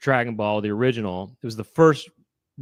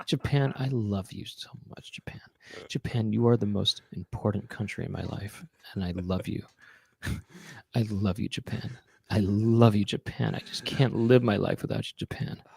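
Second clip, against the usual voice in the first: mock-intimate tone, much quieter; 2 semitones lower, 7 dB quieter than usual. Speaker imitates how the listener talked about Japan, mock-intimate love declaration. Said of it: "Japan was a person that you were telling".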